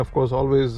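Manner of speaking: ordinary talk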